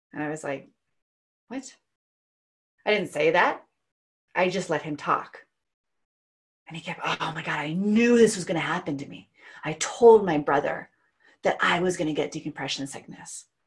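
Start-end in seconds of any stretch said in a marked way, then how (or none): 7.1-13.5 put-on dramatic voice, much lower pitch. Retelling what a man with decompression sickness kept saying, imitating him being dramatic. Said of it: "and being all dramatic".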